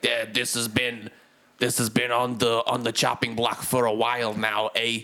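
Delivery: odd put-on Brooklyn accent. Retelling a scene, the recluse's visitors answering him, weird brooklyn accent. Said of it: "They've got like weird Brooklyn accents".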